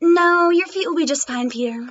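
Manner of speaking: ordinary delivery, nothing marked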